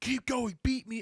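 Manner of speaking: very high, yelled, screamed voice. Retelling how the first-place competitor urged them on: imitating someone screaming. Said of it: "standing next to me, screaming at me".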